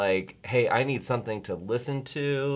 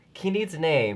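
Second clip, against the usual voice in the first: put-on bubbly kids' television presenter voice; 4 semitones higher than usual. Retelling asking a little child to name the dragon, Disney Channel voice. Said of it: "doing my best like Disney Channel voice".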